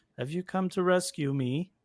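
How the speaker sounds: mechanical, machine-like robotic toy voice. Narrating a scene where a toy turns to a woman and speaks, robotic voice. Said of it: "in a robotic voice".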